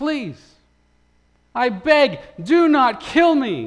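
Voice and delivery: desperate, loud, high-pitched pleading yell. Narrator reads a young captive calling up out of the pit, yelling and begging. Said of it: "he yelled out of the pit".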